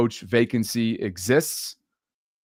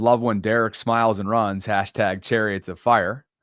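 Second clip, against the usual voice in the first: plain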